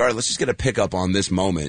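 plain

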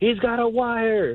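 blurted-out, sudden, high shout. Retelling what he yelled out during a session, retelling yelling out. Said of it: "I yelled out".

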